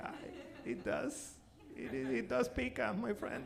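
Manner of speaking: mock tearful, breathy near-whisper. Retelling answering a friend about spicy food with a single tear: imitating own past tearful voice. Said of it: "with just one single tear being like".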